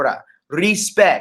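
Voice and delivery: poor put-on Jamaican accent. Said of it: "in my Jamaican accent".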